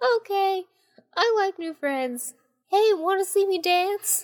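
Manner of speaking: very high, very slow voice with light twang. Narrator reading the little turtle's reply in a story, Tiny Turtle's high-pitched twangy voice. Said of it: "He had a slight twang to his high-pitched voice".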